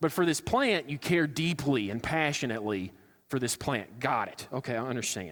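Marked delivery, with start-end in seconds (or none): none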